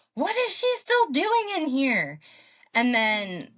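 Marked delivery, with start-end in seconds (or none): 0.2-2.2 very high, shrill scream. Retelling a crowded hospital room, a man screaming: imitating a man screaming. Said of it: "hearing a man scream".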